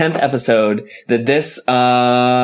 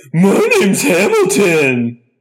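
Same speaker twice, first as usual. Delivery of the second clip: high-pitched character voice swooping around; 7 semitones higher than usual. Introducing himself as the special guest Hamilton: Hamilton voice. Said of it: "I've been practicing my Hamilton".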